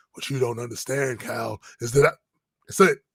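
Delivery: deep, rough, gravelly voice. Retelling a confrontation, the speaker quotes someone addressing Cal in a gravelly voice. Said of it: "in this gravelly ass voice".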